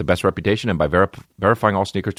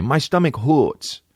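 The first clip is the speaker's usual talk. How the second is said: put-on baby talk voice, like a little baby; 7 semitones higher than usual. Speaker retells telling his girl that his stomach hurts; baby voice. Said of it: "baby voice with your girl. I do it all day long".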